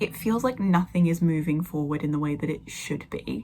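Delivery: ordinary talk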